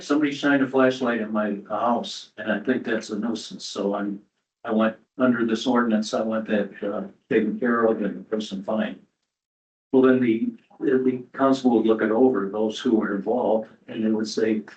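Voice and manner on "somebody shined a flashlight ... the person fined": usual speaking voice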